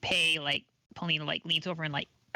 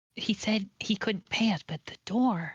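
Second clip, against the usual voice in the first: loud stage whisper; 4 semitones higher than usual. Voicing a character who whispers loudly enough for Harbin to hear: loud whisper. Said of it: "she she whispers".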